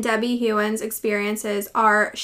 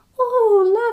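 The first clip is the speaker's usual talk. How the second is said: put-on cute British old woman accent, higher, louder; 12 semitones higher, 5 dB louder than usual. Retelling what a grandmother said, imitating her cute British accent. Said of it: "she had this cute little accent".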